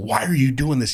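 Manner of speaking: re-enacted shouting. Recounting own words on a phone call to her, retelling own yelling at her. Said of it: "Yelling at her".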